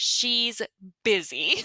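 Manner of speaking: loud, acted-out screamed delivery. Retelling a birth, quoting what was screamed at the husband: imitating a scream. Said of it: "I screamed at him".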